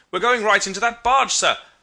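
shrill, very loud, high-pitched shouted cry. Reading a story aloud, a voice in the dark warns of collision: crying out warningly. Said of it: "Another voice cried warningly".

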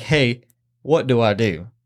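freaked-out, drawn-out panicked voice. Retelling a hunter on the walkie-talkie after a shooting: imitating someone panicking. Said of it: "freaking the fuck out".

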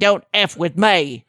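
slow, put-on British accent. Retelling what an arrested man told police, in a British accent. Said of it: "maybe he said it with a British accent".

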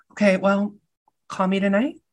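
tiny, high, shrunken little voice. Retelling a movie scene, quoting the character: tiniest Kimmy voice. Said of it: "the little tiniest Kimmy voice".

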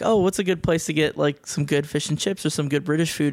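normal talking voice

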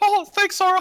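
cartoonish voice, very high and loud. Retelling a dramatic game scene, imitating Mickey Mouse voice. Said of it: "He's like".

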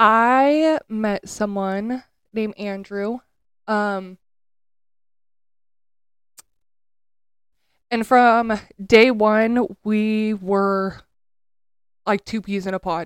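holding back tears, drawn-out "I". Interviewee answering whether they have ever truly been in love, trying not to cry. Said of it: "We're going to try not to cry".

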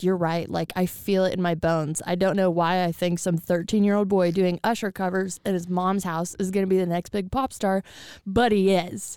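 plain

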